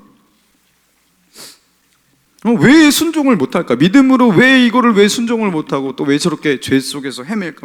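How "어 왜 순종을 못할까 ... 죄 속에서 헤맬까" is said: exasperated, frustrated tone, pushed up high. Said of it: "막 이러면서 답답한 거죠".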